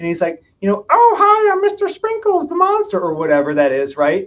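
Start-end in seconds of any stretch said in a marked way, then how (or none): 0.9-3.0 very high, loud, silly, squeaky monster voice. Retelling a dad calming his scared kid at bedtime, in a funny Mister Sprinkles voice. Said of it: "the dad does a funny voice".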